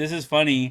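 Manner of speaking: ordinary talk, nothing marked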